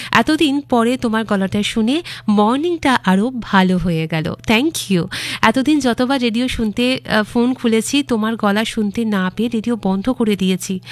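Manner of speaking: ordinary delivery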